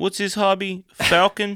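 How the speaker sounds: put-on New Jersey accent.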